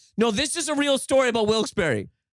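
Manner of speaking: high-pitched shouting yell. Pressed by the other speaker about his story, he answers back: yelling. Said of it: "is he yelling too much?".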